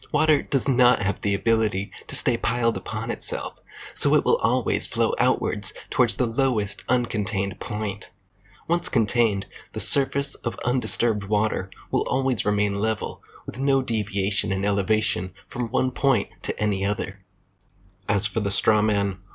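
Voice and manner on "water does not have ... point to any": put-on condescending, lecturing voice. Answering a critic by imitating Professor Dave: condescending cadence. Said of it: "with that condescending cadence he delivers so naturally".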